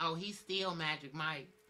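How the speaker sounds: drawn-out slow delivery. Reading a viewer's comment aloud, imitating Kiana's voice. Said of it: "read these comments in y'all voices".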